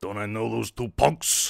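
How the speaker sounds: deep, put-on Japanese gangster voice. Reading a game's dialogue aloud, voicing a gangster: Yakuza voice. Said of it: "That's my Yakuza voice".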